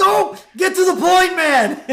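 very high, very loud panicked cry, put-on. Retelling a cartoon scene where a character rushes a reading: imitating Homer panicking. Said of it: "He's so panicked".

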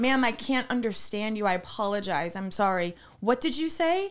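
ordinary talk

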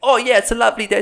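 loud, high-pitched, exaggerated British accent. Mimicking friends who switch on for the camera, exaggerated british accent. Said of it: "their British accent, like, turns up 5 cranks".

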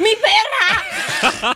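mock cry breaking through laughing, high swooping shout. Retelling a laughing fit after an elevator episode: retelling own laughing fit. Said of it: "yo estaba con un ataque culiado".

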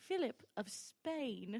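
poor put-on British accent. Playing a role while others joke about the accent, in a bad british accent. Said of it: "I will throw in a bad accent".

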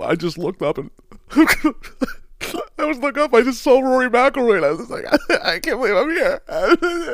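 very high, slow, teary, crying through the words. Acting out a golfer's tearful post-round interview: mock crying as Michael Block. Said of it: "the guy that's just gonna cry every time they talk to you".

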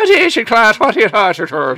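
put-on Irish accent. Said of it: "do everything in an Irish accent".

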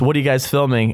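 ordinary talk, nothing marked

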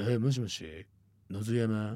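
imitated very low voice. Retelling how an unknown caller first spoke on the phone, imitating a very low voice. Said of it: "めっちゃ低い声で".

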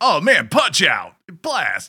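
put-on high, swooping nineties kids' TV commercial voice. Describing a nineties morning cartoon advertisement: imitating a nineties TV commercial. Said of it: "that nineties type of thing".

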